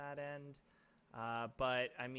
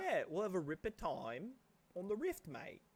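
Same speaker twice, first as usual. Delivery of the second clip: awful put-on British lad accent, sing-song and high; 6 semitones higher than usual. Continuing the bit imitating the team, put-on British accent. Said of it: "They should not let us do accents".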